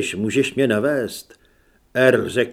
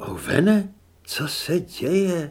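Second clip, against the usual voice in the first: half-awake, drowsy, very slow, drawn-out mumble; 6 semitones higher, 4 dB quieter than usual. Narrating a woman who has just opened her eyes, mumbling sleepily. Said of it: "Zamumlala ospale".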